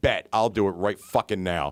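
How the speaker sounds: play-acted fury, angry and fired up. Retelling how the woman took his dare to pay for a lady's meal, mock-angry. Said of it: "but she was pissed".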